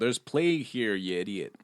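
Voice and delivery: put-on heavy New York accent, laid on thick. Retelling a movie character's line, speaking in a thick New York accent. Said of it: "in a really thick New Yorker accent go".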